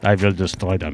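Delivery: bad, imitated German accent. Imagining Ernesto with a German accent, Ernesto in hack German accent. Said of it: "That's my hack at a German accent".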